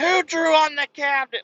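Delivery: mock very high, shrill yell. Speaker retells his wife on the phone, imitating wife yelling. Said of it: "Like yelling in my ear".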